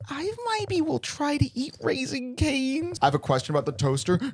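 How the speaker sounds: put-on swooping, cutesy, babyish little-kid voice. Mimicking how Eve talks, imitating Eve's baby voice. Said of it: "those are my two impressions of Eve... baby or monster".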